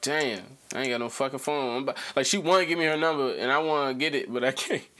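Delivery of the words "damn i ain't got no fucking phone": ordinary delivery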